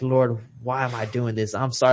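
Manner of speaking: put-on sobbing, crying voice. Retelling praying after reading a note, imitating own crying plea. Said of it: "And I'm bawling, I'm crying".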